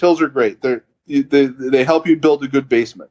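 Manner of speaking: put-on imitation of broken English. Retelling what a cycling mentor said about hills: imitating broken English. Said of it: "it's broken English a little bit".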